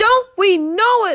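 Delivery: very loud, slow, drawn-out groaning. Narrator reads the engines answering Duck together: groaning. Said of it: "they groaned".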